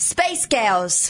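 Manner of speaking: Scottish-accented speech. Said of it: "that sounds more Scottish".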